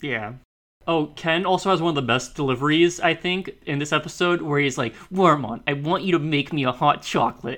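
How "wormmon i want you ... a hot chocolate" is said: snooty, haughty, stuck-up tone. Recounting a favorite line from an episode, mock-snooty Ken voice. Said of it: "he sounds like so, like, snooty with it".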